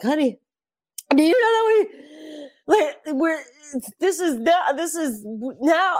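very high, slow, tearful, words breaking off. Retelling telling honey about history, imitating own tearful voice. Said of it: "and I'm just crying".

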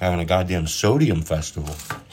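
ordinary delivery

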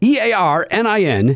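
slow, letter by letter spelling of E A R N I N.

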